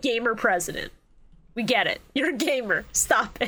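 normal talking voice

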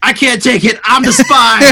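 shrill, very high, blurted yell. Retelling how he yelled out during the game: imitating someone yelling. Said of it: "and then just yelled out".

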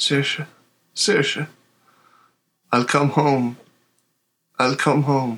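whispering. A player describes calling out from unconsciousness to saoirse: unconscious whisper. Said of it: "you may just hear me whispering out of my unconsciousness".

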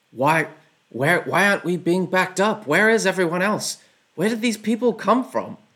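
orc voices yelling, high-pitched. Narrating to players as they take their shot: orcs shouting to themselves. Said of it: "you hear the orcs sort of like shout to themselves".

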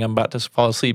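plain

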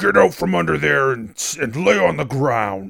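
rough, loud shouted orc voice. Game master voices an orc shouting out to the players, orc shouting. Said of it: "the orc sort of shouts out to you".

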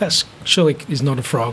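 normal talking voice

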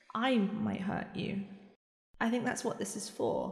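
very quiet, barely-there tiny little voice. Narrator voicing a woman holding her bandaged hand, even smaller voice. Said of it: "in an even smaller voice".

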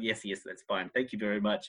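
acted weary politeness, plainly fed up. Retelling a film character ordering room service: imitating fed-up politeness. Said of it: ""I'm so over this, but I'm being polite."".

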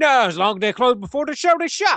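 put-on Australian accent. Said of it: "in the Australian accent".

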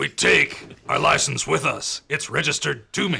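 loud, gruff, rough put-on character voice. Imagining how the listener who wrote in sounds: imitating Charlie's voice. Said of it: "is that what you think Charlie sounds like?".

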